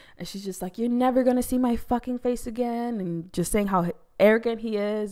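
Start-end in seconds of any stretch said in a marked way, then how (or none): 0.8-3.0 mock yelling, higher pitch. Recounting a couple's fight, acting out her yelling at him as she walks away. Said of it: "just starts yelling at him".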